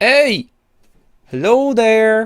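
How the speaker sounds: very high, loud giant character voice calling out. Voicing a giant furbolg woman calling out to the players: voicing a giant furbolg woman. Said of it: "I had the voice planned".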